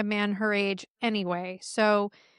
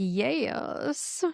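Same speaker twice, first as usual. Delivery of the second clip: "yes" drawn out over several syllables; 3 dB quieter than usual. Discussing clips from an episode, with 'yes' stretched into several syllables. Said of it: "stretching out, you know, a word into like multiple syllables".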